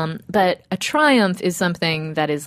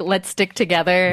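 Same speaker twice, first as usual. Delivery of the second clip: ordinary delivery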